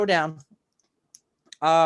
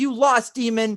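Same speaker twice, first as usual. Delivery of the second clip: high, loud, angry scream. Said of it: "he starts screaming".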